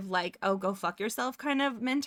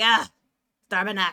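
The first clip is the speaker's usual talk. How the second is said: heavy smoker's voice, louder; 8 dB louder than usual. Showing how to say a Quebec swear word: like a heavy smoker. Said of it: "say it like you've been smoking three packs of cigarettes that day".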